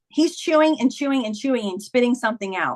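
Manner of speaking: ordinary delivery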